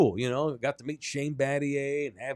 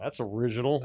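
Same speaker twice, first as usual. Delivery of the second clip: mock patronizing, superior, condescending tone; 3 semitones lower than usual. Retelling a driver's reaction to a team name: imitating condescending remark. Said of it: "all condescending".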